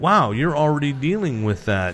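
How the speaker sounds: plain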